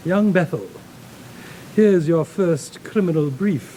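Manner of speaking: put-on British accent.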